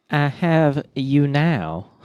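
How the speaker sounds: put-on genteel American Southern accent. Discussing an actor's accent, the speaker quotes his line: southern gentleman accent. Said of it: "You sounded like a southern".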